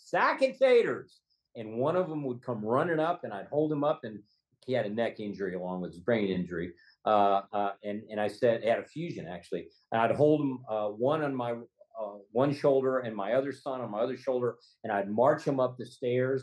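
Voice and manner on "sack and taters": high, slow yell at the top of the voice. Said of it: "just yell out at the top of my voice".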